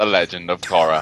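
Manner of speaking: very low, deep narrator voice. After a failed attempt by someone else, show how he really sounds with a Morgan Freeman impression. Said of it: "Morgan Freeman is more like this".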